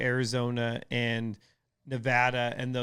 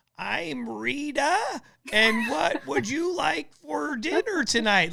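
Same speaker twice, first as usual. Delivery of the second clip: put-on slow, high granny voice; 13 semitones higher than usual. Retelling how a daughter plays a granny from a cartoon: Rita grandma voice. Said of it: "they have these grandma voices".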